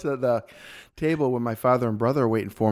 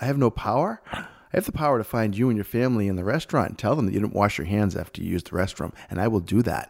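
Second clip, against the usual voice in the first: ordinary talk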